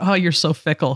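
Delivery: remark said with laughter. Parent retelling a remark made to their daughter, retelling a laughing remark. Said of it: "there was laughter in my, in my voice".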